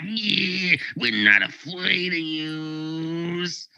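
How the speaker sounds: hostile, angry thug voice, drawn-out you. Game master voicing an attacker who kicks a player, angry character voice. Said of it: "he seems pretty angry".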